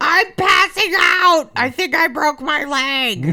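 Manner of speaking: mock screaming. Retelling an injury, screaming to B-dubs about the leg: imitating her own screaming. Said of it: "I'm just screaming".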